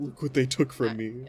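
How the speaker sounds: tearful, blubbering, sobbing, crying voice. Voicing Whisker eating ice cream after everyone left: Whisker crying.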